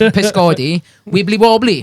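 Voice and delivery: Welsh accent, a best-effort attempt. Saying Welsh colloquial names for jellyfish, in a best Welsh accent. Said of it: "in my best Welsh accent".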